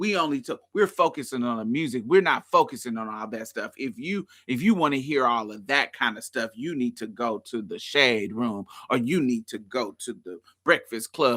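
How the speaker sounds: acted, snooty, low, sarcastic lecturing tone. Quoting someone's answer to a complaint about interview questions: retelling a sarcastic reply. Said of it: "responded to me in a sarcastic way saying".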